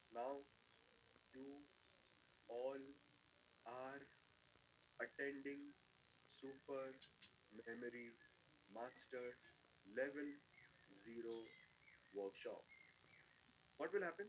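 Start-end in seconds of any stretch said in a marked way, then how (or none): 0.1-12.6 drawn-out near whisper, very slow, halting broken phrases. Speaker demonstrates very slow talking to workshop attendees: very slow speech. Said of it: "I'll speak in su- in a very slow speed".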